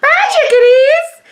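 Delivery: very high, squeaky cartoon-mouse voice. Teasing another speaker whose voice went high saying goodbye, mimicking a squeaky high voice. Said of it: "You sound like I wannabe uh, Mickey Mouse".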